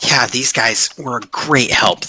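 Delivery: muttered quietly under her breath. Voicing a tinker character speaking about the party: under her breath. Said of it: "under her breath, she goes like".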